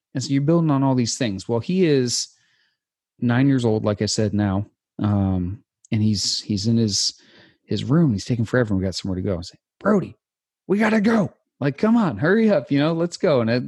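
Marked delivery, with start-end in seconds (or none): 9.8-13.4 very high, urging drill-instructor voice. A dad retells hurrying his nine-year-old son out, retold drill-instructor voice. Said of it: "the drill instructor voice inside of me is starting to come out".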